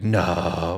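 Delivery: put-on grunty drunk voice, no grunted. Retelling a fan's reply at a football game: imitating a grunty drunk no. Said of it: "the drunk frat boy response when they give you that no, that grunty no".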